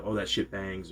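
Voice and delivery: ordinary talk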